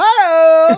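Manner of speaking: put-on very high, joyful, gleeful, drawn-out toddler voice. Retelling how the toddler walks into rooms: imitating Rosie's joyful hi. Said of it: "she's so joyfully, like, stomping around".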